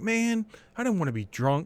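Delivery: mock angry complaining. Retelling a friend's complaint after liquor was put in his tea: imitating an angry friend. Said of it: "He was all mad".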